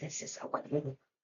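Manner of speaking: hushed, soft, very quiet whisper. Retelling going over very quietly to a neighbor: retelling a whisper. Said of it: "and I whispered".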